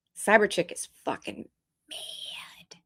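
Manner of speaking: quiet whispered voice.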